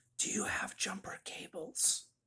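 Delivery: very faint, almost a whisper. Retelling a guy asking for jumper cables: imitating a faint near-whisper. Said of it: "in a really faint voice, like, almost in a whisper".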